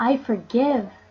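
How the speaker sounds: firm, convinced, said with real conviction. Leading a forgiveness meditation, saying the words: with conviction. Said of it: "Say it with conviction".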